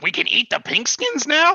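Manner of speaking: shrill, swooping, very high, loud reptile creature voice. Describing what the hidden party hears, voice Akko's reptilian humanoid impression. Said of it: "doing his best impression of a reptilian humanoid".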